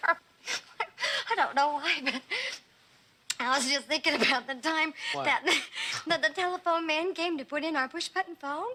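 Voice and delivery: giggling, laughing through the words. Recalling a funny memory after being told not to laugh: laughing while talking. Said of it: "But you don't have to laugh".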